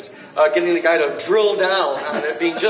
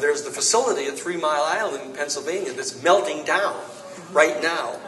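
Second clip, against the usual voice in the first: ordinary delivery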